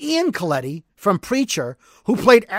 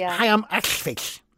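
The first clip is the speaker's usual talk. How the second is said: mangled-mouth voice, quieter and slower; 5 dB quieter than usual. Describing a Preacher TV character, introducing himself in the Arseface voice. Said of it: "he talks like this".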